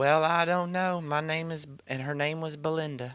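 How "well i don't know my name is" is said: put-on American southern accent. Retelling a session where Brittany suddenly spoke as someone else, imitating Brittany's southern accent. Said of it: "she started talking in a southern accent".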